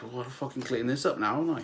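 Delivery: mock muttering under breath. Recounting what a server muttered after an accident, retelling a mumble under the breath. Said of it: "mumbled under his breath".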